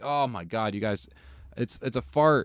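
ordinary delivery

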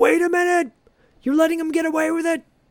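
put-on, very high-pitched yelled protest. Retelling a courtroom scene where a father shouts at the judge: retelling a shout. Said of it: "Eddie shouts".

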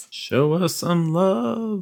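very drawn-out, slow, high-pitched pleading. Closing the podcast by asking listeners for love: mock begging for love. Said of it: "my attempt at begging for love".

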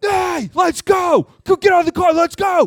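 put-on angry snap. Retelling how his dad stepped into the street and snapped, retelling dad's angry snap. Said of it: "as fast as my dad snapped, and I mean he snapped".

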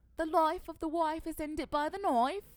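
very loud, high, bad put-on English accent. Showing the others an attempt at an English accent, attempted English accent. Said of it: "You should hear me try to do an English accent".

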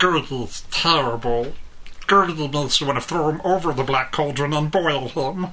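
put-on goblin-like creature voice. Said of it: "like Gollum, but a little bit squeakier".

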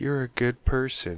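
hushed, half-whispered words. Acting out a sleep headphone device talking to its wearer: half-whispering. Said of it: "it just whispers".

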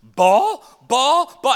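very loud, high, top-of-the-lungs screaming. Retelling how a little boy screamed in a store, imitating a child screaming. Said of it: "he just starts screaming".

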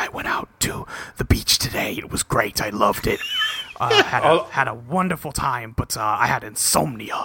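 hushed, close, leaning-in whisper. Retelling how a character leans in at a cafe: imitating someone whispering. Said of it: "he starts whispering some bullshit like".

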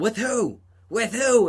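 stretched, very high-pitched, drawn-out yelling. Retelling a man at McDonald's yelling on the phone; retelling a yell into a phone. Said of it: "he started yelling".

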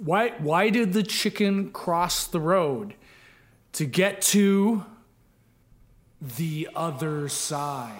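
very slow, drawn-out delivery with heavily stressed key words. After asking to tell the joke really slow, saying it very slow with emphasized words. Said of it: "say the joke really slow and then emphasize some words".

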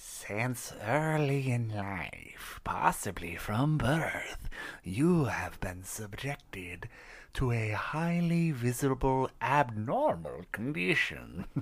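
very slow, eerie, spooky put-on voice. Reading a text aloud after moving the mic, in a spooky voice. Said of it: "I'm going to do a spooky voice".

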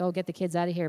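normal talking voice

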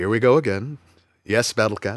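calm, serene, resigned zen voice, soft. Imitating a cartoon hero answering his cat again: He-Man Zen voice. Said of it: "He-Man has that Zen voice".

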